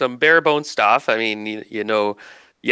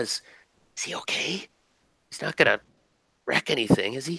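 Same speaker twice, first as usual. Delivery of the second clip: hushed whisper, spoken as an aside; 2 semitones higher, 8 dB quieter than usual. Retelling a woman's question about Toki, asked to another person in a whisper. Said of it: "he kind of whispers".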